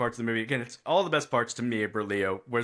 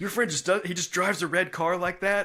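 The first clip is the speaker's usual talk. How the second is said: put-on, high, frantic, alarmed freaking-out voice; 7 semitones higher than usual. Retelling a movie scene where a dad is freaking out: imitating someone freaking out. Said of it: "freaking out".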